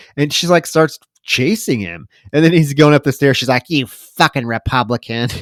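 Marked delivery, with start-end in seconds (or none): 3.7-5.3 put-on scary, feisty old woman voice. Retelling a film scene, voicing a hungry zombie woman: imitating a feisty old woman. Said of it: "this feisty old woman".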